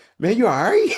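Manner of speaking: high-pitched tone of sheer concern. Retelling a friend's reply after hearing they're panicking: imitating Lee's sheer concern. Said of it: "Like just sheer concern".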